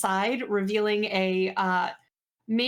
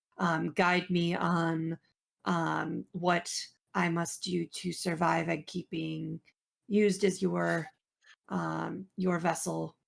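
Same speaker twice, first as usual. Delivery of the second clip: mumbling under breath, much lower and quieter; 4 semitones lower, 4 dB quieter than usual. Playing a character praying to the Dark Lord: mumbled prayer under breath. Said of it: "I'm just mumbling as I'm like".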